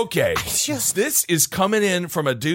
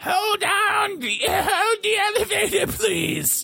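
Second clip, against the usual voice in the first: put-on old woman voice, much higher and slower. Telling an elevator story, the speaker imitates an old woman's voice. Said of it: "I do like that voice".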